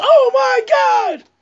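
high ringside announcer call. Trying to be like a named commentator: imitating Joey Styles. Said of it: "I'm trying to be like Joey Styles".

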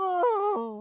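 small sorrowful oh. Playing a hurt character after a fall: saddest little oh. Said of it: "the saddest little".

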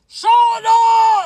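full-throated, high, very loud scream. A toad cuts off a voice announcing the greatest toad, screaming. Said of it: "screamed Toad".

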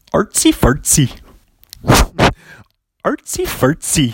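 cleanly done put-on Swedish accent. A podcast host gives a clean take of their Swedish accent. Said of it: "a clean take of my Swedish accent".

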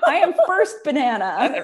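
very loud, squeaky, bouncy cartoon critter voice. Riffing with another speaker, doing a Minion voice. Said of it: "You sound like a minion".

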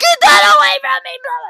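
frantic near-tears shriek, very high and very loud. Retelling showing Dad a spider, imitating him screaming. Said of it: "He is screaming like I've never heard him scream".

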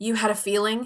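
put-on judgmental tone. Retelling a scene from the show: judgmental Cristina impression. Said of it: "Christina judgmentally says".

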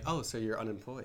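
put-on girl character voice. Retelling what a girl says to an aspiring entrepreneur: imitating a girl's reply. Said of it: "they're like".

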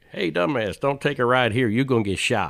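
very loud, high-pitched put-on Alabama accent. Riffing on spoken driving directions, in an Alabama accent. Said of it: "like an Alabama accent".

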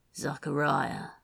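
speaking low. A narrator reads Antonio's question to Zachariah, in a low voice. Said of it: "Antonio said in a low voice".

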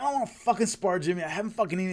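put-on angry outburst. Retelling a hungry man refusing to spar after a long drive: mock-angry hangry rant. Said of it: "He got all mad and left".

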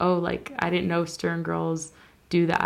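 ordinary talk

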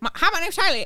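put-on fast, thick Southern accent. Retelling how a roommate talked: fast thick Southern accent. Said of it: "she talked fast and real Southern".

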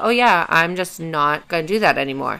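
ordinary talk

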